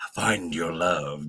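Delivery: put-on sinister delivery. Repeating own earlier words to show how they sounded: mock ominous tone. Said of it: "it sounded ominous".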